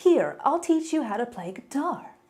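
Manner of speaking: high, swooping, bouncy, eager, relentlessly and annoyingly upbeat. Retelling a cartoon scene: imitating Johnny Osmond, annoyingly positive. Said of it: "so annoyingly positive".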